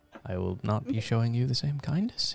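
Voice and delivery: soft, muttered under the breath. A character thanking someone who bought him a drink, muttering under his breath. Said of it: "he mutters under his breath".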